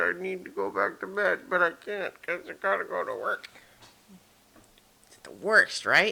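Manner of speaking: sleepy, drowsy delivery. Talking just after getting up early for work: sleepy. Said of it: "I'm really sleepy".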